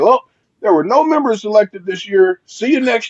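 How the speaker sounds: high, loud, proud, cheerful announcer voice.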